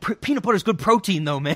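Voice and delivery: high, loud, laughing voice.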